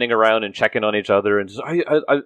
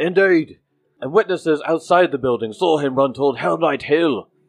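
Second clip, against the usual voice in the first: called out in a guard's announcing manner; 2 semitones higher than usual. Voicing a second guard who shouts to the crowd: guard shouting. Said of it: "The second guard shouts to Innocent".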